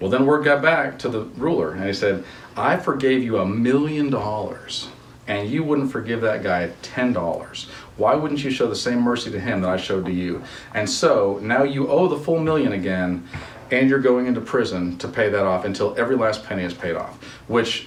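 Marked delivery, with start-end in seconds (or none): none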